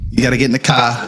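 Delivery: put-on Boston accent. Quoting a favorite movie line to the others, in a Boston accent. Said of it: "Boston accent".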